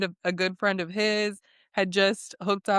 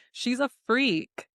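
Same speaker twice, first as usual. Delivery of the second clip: usual speaking voice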